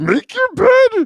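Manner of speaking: put-on drunk-sounding creature voice, very high and loud. Showing what you think Jordan Peterson sounds like, in a drunken Yoda voice. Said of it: "as a drunken Yoda".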